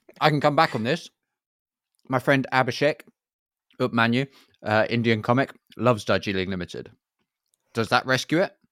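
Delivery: speaking with mouth full. On a podcast, chiming in mid-conversation, talking while eating. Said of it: "because you were eating while you said that".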